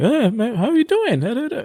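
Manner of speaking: high, squeaky put-on impression voice.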